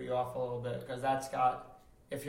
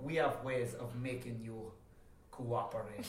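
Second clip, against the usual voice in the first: put-on soft, quiet voice with a vaguely Jamaican accent; 7 dB quieter than usual. Imagining what they would say, in a vaguely Jamaican accent. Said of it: "That's just Jamaican or something".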